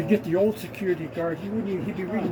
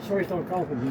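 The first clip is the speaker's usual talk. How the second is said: ordinary talk, nothing marked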